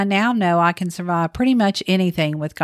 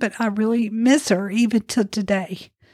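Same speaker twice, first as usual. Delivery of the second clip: speaking through tears; 3 semitones higher than usual. Talking about how much they still miss their mother, crying. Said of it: "I'm sorry, I'm crying".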